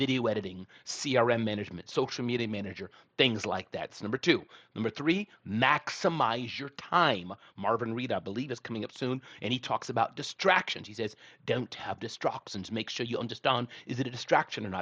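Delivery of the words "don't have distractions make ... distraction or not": bad put-on British accent. Quoting an upcoming speaker's advice on distractions, bad british accent. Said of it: "That was a bad British accent".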